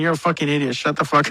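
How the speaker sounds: plain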